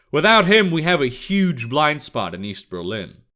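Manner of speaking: ordinary delivery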